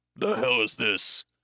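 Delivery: put-on goblin-like voice. Storyteller voicing a hobgoblin reacting as the group arrives, hobgoblin voice. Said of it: "And the hobgoblin's like".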